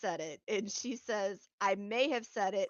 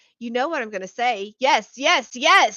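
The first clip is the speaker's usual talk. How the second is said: very loud, combative, aggressive delivery; 3 semitones higher, 11 dB louder than usual. Retelling a woman's answer to a questioner, the speaker imitates her aggressive reply. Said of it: "She starts getting like aggressive".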